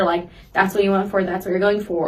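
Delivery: ordinary delivery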